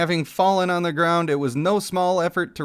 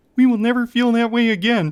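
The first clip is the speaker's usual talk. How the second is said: spot-on, high, raised frog puppet voice; 6 semitones higher, 4 dB louder than usual. Voicing a game character, perfect Kermit the Frog voice. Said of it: "that was a perfect Kermit".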